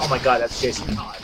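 ordinary talk, nothing marked

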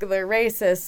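ordinary talk

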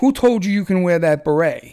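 mock-angry barking, imitated angry bark. Retelling how a seminar teacher confronted a man, imitating him barking. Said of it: "barked at him".

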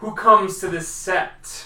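very loud, stern, solemn, booming and slow. Voicing an elder warrior greeting arrivals at the sept: grave, stern question. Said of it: "As he looks at you gravely".

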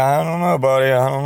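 put-on mumbling under the breath. Retelling an answer to a child's question while holding back laughter: imitating mumbling under breath. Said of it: "trying to mumble under my breath".

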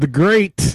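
sarcastic, mocking tone. Introducing the next post in a list of polls: sarcastic. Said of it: "I'm saying that sarcastically".

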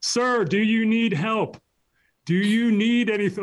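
loud, slow, high-pitched voice. Retelling how people in public offered help: imitating someone asking in a loud voice. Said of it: "raising their voice and asking me in a loud tone".

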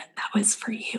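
soft, breathy whisper. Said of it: "whispers in my ear".

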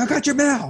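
very high, ticked-off, pissed-off voice. Retelling how a man delivering mail showed up pissed off: imitating a pissed-off man. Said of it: "He shows up pissed off".

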